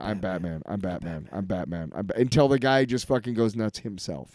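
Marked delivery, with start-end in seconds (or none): 0.0-2.2 soft, relentless half-whisper, repeated. Retelling a comic scene of a repeated line: imitating Batman half-whispering. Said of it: "he's literally whispering back to him".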